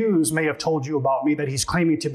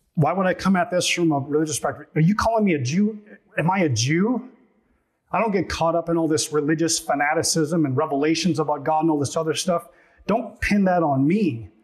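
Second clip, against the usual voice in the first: usual speaking voice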